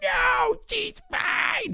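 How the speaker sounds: put-on shrill, very high screeching child voice. Retelling a boy throwing his arms up and shouting: imitating a kid screeching. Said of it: "he was screeching at some points".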